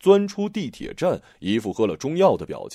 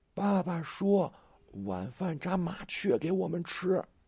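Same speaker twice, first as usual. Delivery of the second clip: high, breathy shout delivered in a whisper; 5 semitones higher, 9 dB quieter than usual. Narrating a story, voicing a boy who calls out in a breathy whispered shout. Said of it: "用气声冲他喊".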